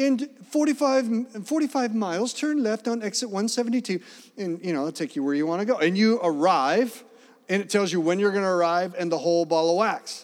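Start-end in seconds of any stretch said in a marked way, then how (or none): 0.0-4.0 higher-pitched British woman's sat-nav voice. Describing the phone's navigation directions, imitating British lady's GPS voice. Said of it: "I have a British lady's voice on here".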